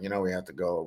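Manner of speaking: very quiet, soft, tense half-whisper. Retelling half-whispering to his wife before their stop, retelling a half-whisper. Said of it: "I whispered to my wife".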